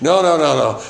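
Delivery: high, loud, insistent, repeated refusing tone.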